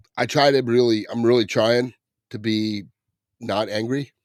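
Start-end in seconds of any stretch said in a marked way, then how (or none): none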